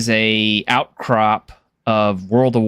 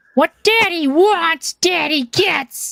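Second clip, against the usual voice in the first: little squeaky gnome voice, very high pitched. Imagining the gnome walking over to somebody, in a little squeaky voice. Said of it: "like that little squeaky voice".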